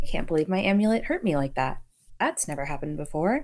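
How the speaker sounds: absent-minded musing voice, faintly stunned. Speaking as Leona about her amulet hurting her: mindless, a little shocked. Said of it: "mindlessly just like".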